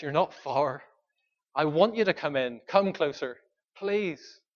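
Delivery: warm, earnest, pleading tone. Retelling Jesus urging a man outside to come in: pleading as Jesus. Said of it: "he's pleading with the man".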